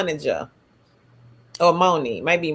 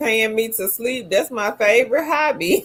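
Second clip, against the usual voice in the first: ordinary delivery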